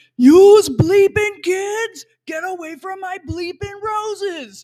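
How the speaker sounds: put-on very high, shrill, loud, angry cranky old-timer shout. Recalling a man who yelled at kids near his roses, imitating him yelling. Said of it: "Sounded kind of like this when I was a kid".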